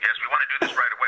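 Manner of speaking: very enthusiastic, fast, eager rushed delivery.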